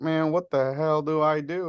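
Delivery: put-on slow good-old-boy voice. Retelling a fishing trip, quoting John at the sonar: imitating John's good old boy voice. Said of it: "and that good old boy voice".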